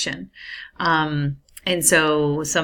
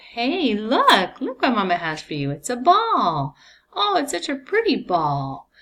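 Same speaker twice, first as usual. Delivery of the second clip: put-on high sing-song baby talk, "ball" drawn out; 8 semitones higher than usual. Demonstrating to listeners how a mother talks to a child, in motherese. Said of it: "there's an example of motherese".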